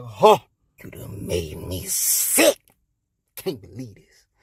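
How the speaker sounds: low, slow, disgusted groaning god voice.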